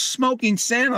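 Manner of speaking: very high, shrill, squealing shout. Retelling how a lady in a pub recognized him: imitating someone yelling.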